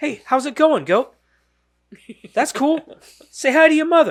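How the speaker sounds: very high-pitched voice used for talking to animals. Recalling an SNL sketch to friends, the speaker does: Mark Wahlberg impression. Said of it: "he mimics Mark Wahlberg talking to animals".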